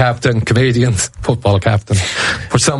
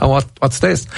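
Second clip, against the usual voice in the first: usual speaking voice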